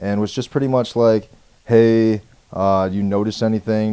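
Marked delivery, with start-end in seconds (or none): 1.7-3.9 put-on sarcasm, louder and slower. Telling of being pulled over, the speaker quotes the cop at the window: imitating a sarcastic cop. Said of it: "Just kind of being super sarcastic".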